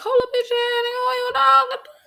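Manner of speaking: play-acted, shrill, very high-pitched scolding yell. Retelling her own reply to a coworker: retelling her own yell. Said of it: "So when I had to yell".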